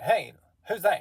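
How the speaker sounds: very high, very loud Southern voice, yelling. Voicing a character who spots a wounded man, in a higher-toned Southern accent. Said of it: "he has a higher toned uh, Southern accent".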